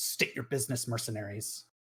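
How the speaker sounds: real sharp, authoritative, commanding voice. A narrator voices a small girl addressing the mercenaries, speaking sharply. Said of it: "She speaks real sharply and says".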